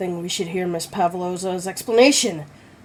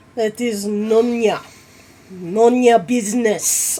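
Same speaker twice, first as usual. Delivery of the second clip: raised, weak, unconvincing fake Russian accent; 4 semitones higher, 5 dB louder than usual. Player voicing a crewman who refuses to answer: attempted russian accent. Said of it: "That didn't sound very Russian".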